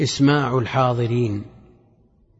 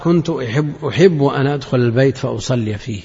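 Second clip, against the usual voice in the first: usual speaking voice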